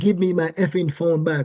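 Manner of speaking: normal talking voice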